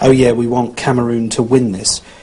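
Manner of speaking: plain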